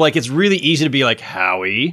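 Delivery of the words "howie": scornful, belittling, derisive tone on the name. Explaining how a name can sound mocking: derisive tone on Howie. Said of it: "that sounds derisive".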